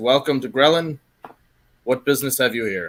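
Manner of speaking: loud, gruff, stern voice. The half-orc officer greets the arrivals to grelin, gruff and stern. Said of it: "quite a gruff and stern tone to his voice".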